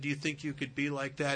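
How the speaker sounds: normal talking voice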